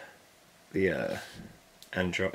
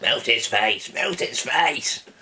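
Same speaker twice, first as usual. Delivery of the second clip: loud, belted, bad put-on cartoon bassist voice. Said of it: "That's an awful Murdoch impression".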